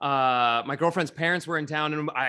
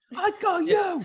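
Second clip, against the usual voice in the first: put-on tough New York voice with higher pitch. Repeating an actor's line from a Batman movie: Robert De Niro impression. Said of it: "just totally channeling De Niro there".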